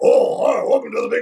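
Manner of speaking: silly, goofy big cartoon bear voice. Recounting the voices heard all day for a bear character: goofy cartoon bear voice. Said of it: "all these voices were just like".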